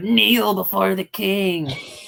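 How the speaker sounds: high, pinched, nasal whining voice. Tell the others what you don't want to hear, in a nasally, whiny Xavier Woods voice. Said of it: "in his nasally, whiny little voice go like".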